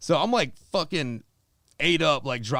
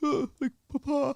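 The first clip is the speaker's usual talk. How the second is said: put-on near-tearful voice, holding back tears, higher; 12 semitones higher than usual. Retelling walking up to see a dad after three years: imitating holding back tears. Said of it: "holding back tears".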